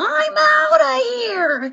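yelping cry. A terrified bear flees after tripping over a log: yelping.

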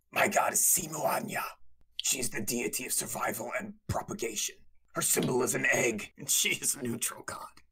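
whispered, breathy lizard-creature voice. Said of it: "Try that lizard folk".

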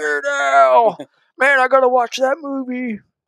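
acted thrilled outburst, very high-pitched, drawn-out, excited. Retelling a neighbor's reaction to a costume: imitating an excited neighbor. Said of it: "he just freaked out".

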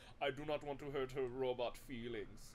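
goofy, hammy, put-on Swedish accent. Podcast host summarizing a movie voices the hero's line, swedish sexual pig voice. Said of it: "a Swedish sexual pig voice".

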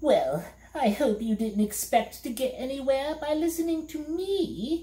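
delighted glee, high rising voice. The voice answers Milo, who complains from the bottom of a pit: gleeful. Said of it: "said the voice gleefully".

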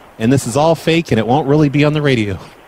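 usual speaking voice

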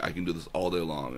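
plain

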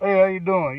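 put-on New York accent. Retelling greeting a big man at a party: New York accent. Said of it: "like, from New York".

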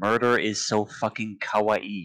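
ordinary delivery

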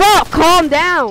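full-on yelling, very loud and high. Telling another player to calm down while gaming, yelling. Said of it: "Tells me to calm down and he's yelling".

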